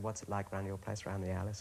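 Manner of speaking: ordinary talk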